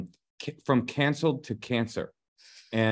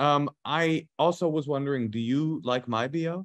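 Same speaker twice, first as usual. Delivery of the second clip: ordinary talk, nothing marked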